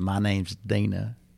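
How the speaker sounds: friendly tone in a put-on Oklahoma accent. Retelling how a young woman introduced herself: imitating an Oklahoma accent. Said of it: "she has this Oklahoma accent".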